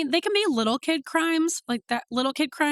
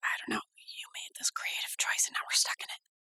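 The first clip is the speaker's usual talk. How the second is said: hushed, breathy whispered back-and-forth. Complaining to the co-host about the whispering choice: whispering. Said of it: "I guess we're whispering".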